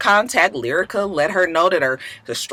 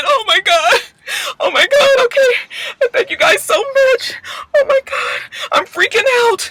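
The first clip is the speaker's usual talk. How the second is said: very high, tearless put-on sobbing. Mocking a woman's tearful reaction to the news: mock crying. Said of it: "She was so upset that she was crying".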